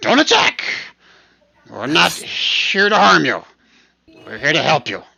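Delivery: very loud, halting speech in broken phrases. Narrating a hidden voice calling out to the players, in broken Common. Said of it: "in broken common".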